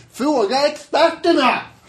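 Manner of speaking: shrill, high, loud yell, pitched way up. Retelling how an economist sat at home yelling during street interviews, retelling a shout. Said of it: "satt han hemma och skrek".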